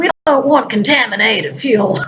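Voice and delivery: weak put-on American accent. Quoting what someone said: pathetic american accent attempt. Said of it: "my pathetic attempt at an American accent".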